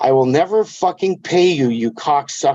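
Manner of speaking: voiced stage whisper spoken right into the ear. Retelling what a winner said into his ear after a match: imitating someone half-whispering. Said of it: "he whispers in my ear".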